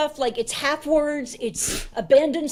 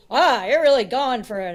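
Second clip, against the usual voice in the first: plain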